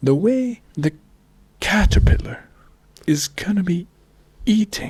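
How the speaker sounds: wildlife documentary narrator voice. Doing an impression so the other speaker can guess who: David Attenborough impression. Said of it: "He talks like this".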